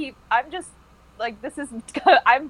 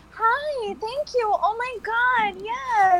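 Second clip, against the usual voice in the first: fake, very high, chirpy customer-service voice; 11 semitones higher than usual. Demonstrating the customer service voice compared with a radio voice, high-pitched customer service voice. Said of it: "your customer service voice is like that high pitch".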